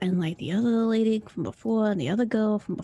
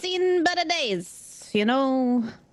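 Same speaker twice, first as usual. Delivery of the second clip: put-on drunk voice, higher; 4 semitones higher than usual. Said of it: "trying to put on this best, like, inebriated voice".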